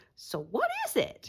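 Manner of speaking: very high, drawn-out cartoonish cat voice. Recalling a joke with a classmate after complicated science explanations, in a cat voice. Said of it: "say in a cat voice".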